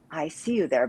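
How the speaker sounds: bare half-whisper under the breath. Retelling a voice heard alone in a hallway: imitating a half-whisper. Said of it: "I heard someone whisper".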